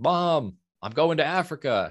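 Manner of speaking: mock very high, long, stretched-out holler. Retelling calling out to Mom while reading about the trip: retelling a yell. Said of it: "And I just yelled".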